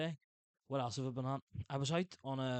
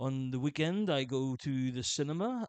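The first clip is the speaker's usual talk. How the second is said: slow, put-on French accent, schoolbook English; 4 dB louder than usual. Retelling an english oral exam answer, spoken with a put-on french accent. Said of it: "I basically just spoke in English with a French accent".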